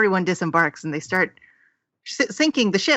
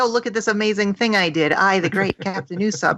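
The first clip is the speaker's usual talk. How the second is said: usual speaking voice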